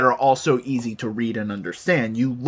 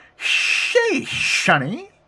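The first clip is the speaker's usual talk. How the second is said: put-on whistly old man voice, much higher pitch; 13 semitones higher than usual. Trying out a weird voice for a short greeting: whistly old-man voice. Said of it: "the weird minor whistly thing".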